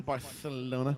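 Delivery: Spanish pronunciation with lisped "th" sound. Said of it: "you gotta say it with, like, a lisp".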